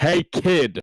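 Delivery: big, loud hailing call. Calling out to someone who hasn't noticed him, in a big bellowing voice. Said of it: "in his big bellowing voice".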